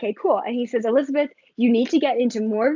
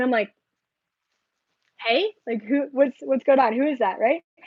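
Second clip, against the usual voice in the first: ordinary talk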